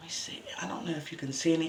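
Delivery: soft, rushed, quick whisper.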